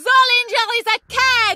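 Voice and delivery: very high-pitched, shrill, all-out shout. Told to yell anything that comes to mind while practicing a voice: shouting. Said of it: "Pretty good".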